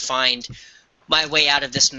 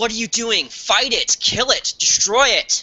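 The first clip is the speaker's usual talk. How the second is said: shrill, very high shouting; 9 semitones higher than usual. Playing a character in a game, shouting at enthralled allies to fight: shouting at the allies. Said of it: "I'm gonna shout out then".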